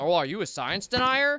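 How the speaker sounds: pseudo-intellectual know-it-all voice. Mocking the way an online Discord person argues: imitating an online Discord person. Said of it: "Of this online Discord person who goes".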